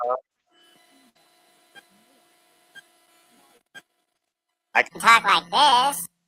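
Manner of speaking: put-on high, loud babyish baby voice. Asked whether the baby voice is on, demonstrating the baby voice. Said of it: "The baby voice".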